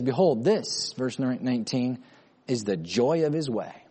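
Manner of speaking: normal talking voice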